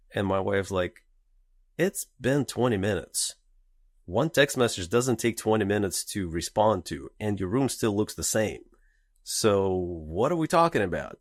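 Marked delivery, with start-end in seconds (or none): none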